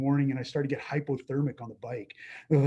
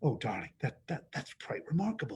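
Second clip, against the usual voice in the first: soft mutter under the breath; 6 dB quieter than usual. Retelling what someone said quietly at a casting: imitating Frank muttering under his breath. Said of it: "I heard Frank under his voice go".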